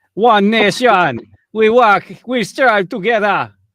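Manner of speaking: very loud, booming vampire accent. Trying to work out a phrase's origin, speaker talks in a Count Dracula accent. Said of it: "It's Count Dracula in the middle".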